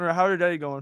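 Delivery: talking with a mouthful, muffled. Asking the other speaker how their day is going: talking with a mouthful. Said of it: "He's got a mouthful of something".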